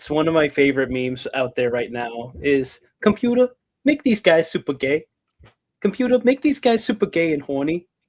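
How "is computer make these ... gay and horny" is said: thickest, exaggerated, swooping New Jersey accent. Quoting a favorite meme in the most new jersey accent possible. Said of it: "say it with the most New Jersey accent possible".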